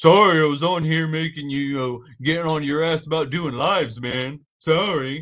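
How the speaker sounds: mocking, high, loud, squeaky cartoon voice. Talking about his fellow former Marine, the speaker does a mocking SpongeBob voice. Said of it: "I'm gonna do that whole SpongeBob thing".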